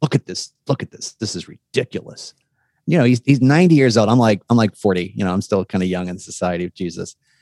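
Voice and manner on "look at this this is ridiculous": gruff, much quieter and slower. Retelling what an older Jesuit said to him about a posted note: gruff voice. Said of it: "he had this very gruff voice".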